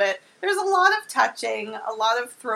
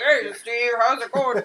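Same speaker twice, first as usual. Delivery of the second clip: fake, put-on regular guy voice. Retelling the miners' dialogue from the movie: put-on guy voice. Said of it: "we were giving them both guy voices".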